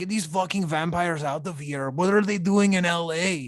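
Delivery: put-on loud Mexican vato accent. Mimicking how an audiobook reader voices a character, stereotypical mexican accent. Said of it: "the guy does like a very stereotypical Mexican".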